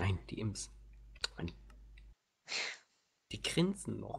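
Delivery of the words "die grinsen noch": stress placed on the word noch. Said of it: "Betonung liegt auf noch".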